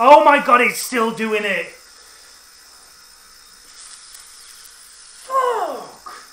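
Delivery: very loud, swooping, exasperated, frustrated outburst. Streamer racing in a game that keeps acting up, frustrated. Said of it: "from getting so frustrated".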